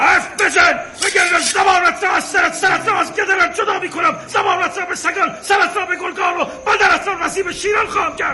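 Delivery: angry, shouting voice.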